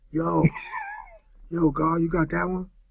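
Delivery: small, raspy, scratchy voice, slow. Speaker retelling a man's reaction to a beat, little scratchy voice. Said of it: "that little scratchy voice".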